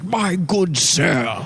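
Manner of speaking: high, fake, upper-class posh British accent. Complaining about a man who code-switches, speaker mimics him in a fake posh British accent. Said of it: "he does like a fake posh British accent".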